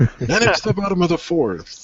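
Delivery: stock sports announcer delivery. Joking that anyone could call games: mock sportscaster voice. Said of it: "it's not hard to talk in that voice".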